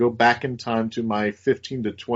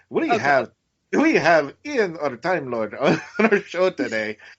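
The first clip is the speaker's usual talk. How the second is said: deliberately terrible put-on Irish accent; 5 semitones higher than usual. Radio show host introduces today's special guest in the worst Irish accent. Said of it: "in my worst Irish accent".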